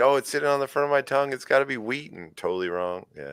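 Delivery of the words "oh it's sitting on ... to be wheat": high, fast, eager, rattled off. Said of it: "I'm like".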